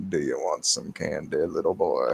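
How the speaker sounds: bad deep, slow, gravelly, rough rumbling voice. Repeating the candy line to show the others: bad Morgan Freeman impression. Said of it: "I don't do a good Morgan Freeman".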